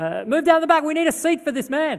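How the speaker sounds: loud, insistent, very high. Recounting a man insisting others make room for a seat: retelling a loud, insistent order. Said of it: "in an even louder voice".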